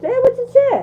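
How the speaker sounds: high, loud, laughing, mocking tone.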